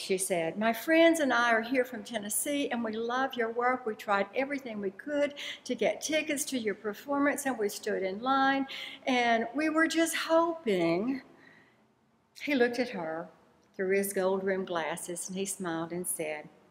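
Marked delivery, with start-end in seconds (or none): 0.6-11.2 play-acted speaking up, projecting out loud. Retelling a woman calling out to a performer in a restaurant, speaking loudly. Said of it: "continued speaking loudly".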